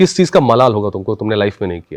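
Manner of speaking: ordinary talk, nothing marked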